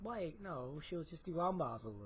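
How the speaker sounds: very quiet, soft, barely audible mumble. Answering another speaker's teasing remark, speaking too quietly. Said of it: "Speak up, please. I cannot hear you".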